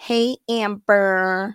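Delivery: put-on, silly American accent. Retelling how her supervisor would greet her: fake american accent.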